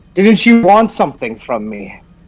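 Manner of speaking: high, called-out yell. Calling out to a fleeing figure while invisible: yelling from invisibility. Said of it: "I'm just going to literally yell".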